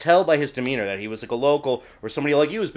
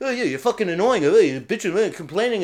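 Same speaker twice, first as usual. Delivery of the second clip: clumsy, bad, fake put-on British accent; 6 semitones higher than usual. Retelling what a guy said to you during an argument, in a bad British accent. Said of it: "My British accent sucks".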